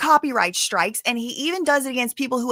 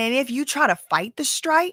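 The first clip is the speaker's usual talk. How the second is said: normal talking voice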